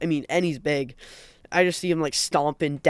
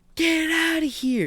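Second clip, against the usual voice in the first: mock, very high-pitched, drawn-out screaming man; 12 semitones higher than usual. Peeking around the corner, the speaker retells a guy overheard: retelling a man screaming. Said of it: "Like he's screaming".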